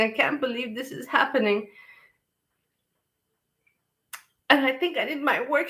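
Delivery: still crying. Saying how emotional the moment is, still crying. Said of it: "and I'm still crying".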